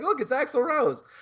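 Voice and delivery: high, slowed, teasing tone.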